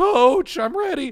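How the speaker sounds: mock adolescent voice break. Speaker re-enacts their voice breaking while hyping up a crowd: retelling own voice crack. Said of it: "some prepubescent teenager".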